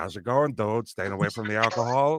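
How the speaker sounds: rough East Coast tough guy voice. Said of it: "combined the East Coast tough guy thing with the Jesse Pinkman thing".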